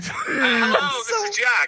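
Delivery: very high, very loud, very slow bellowing shout. Answering a request to yell so others can hear: yelling into the mic. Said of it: "He's fucking blowing out my microphone".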